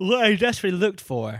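words pulled out of shape by a yawn. Discussing a character, yawning while speaking. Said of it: "Excuse me, I yawned".

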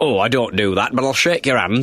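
put-on thick Yorkshire accent. Signing autographs at halftime, answer a selfie request in David Seaman's thick Yorkshire accent. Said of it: "in his thick Yorkshire accent".

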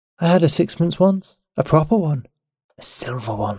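put-on dreamy, soft murmur like telling an old tale. A woman in a cool, damp tunnel, speaking to the narrator in a dreamy murmur. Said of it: "she murmured".

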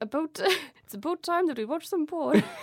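put-on Canadian accent. Sharing porn facts with another speaker as a joke: Canadian accent. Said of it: "Good Canadian accent".

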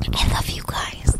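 soft, breathy, barely voiced whisper. Telling the others at the end of the show, whispering. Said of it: "Why are you whispering it?".

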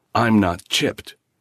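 blustering, angry, defiant bravado. The kid, held by the nerve by the man tracking him, answers with angry bravado. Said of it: "angry bravado tone".

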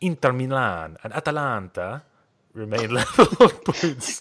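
loud, exaggerated, over-the-top fake Italian accent. Reading a football results report to the lads, in an over-the-top Italian accent. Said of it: "in an Italian accent".

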